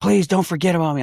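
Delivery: frantic, panicked, very high pitch. Retelling calling out to the guards: retelling a panicked plea. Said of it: "I was panicking".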